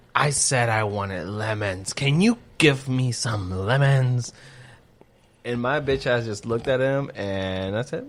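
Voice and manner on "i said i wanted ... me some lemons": snooty, condescending voice full of disgust. Retelling what a man said after being given limes instead of lemons; mimicking a condescending, disgusted tone. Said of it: "the most condescending, disgusted tone of voice".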